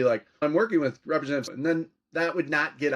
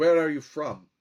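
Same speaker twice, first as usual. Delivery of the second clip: put-on heavily accented European English, thick. Retelling a Bulgarian professor questioning you, in Professor Riddell's thick European accent. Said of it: "in this thick European accent".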